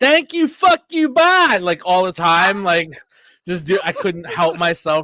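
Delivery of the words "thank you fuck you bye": shrill, very high, loud put-on voice. Joking about being unable to stop slipping into a Jim Cornette impression. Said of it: "doing a Cornette impression".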